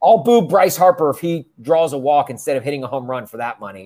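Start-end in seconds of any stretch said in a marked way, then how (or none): none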